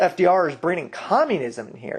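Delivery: ordinary delivery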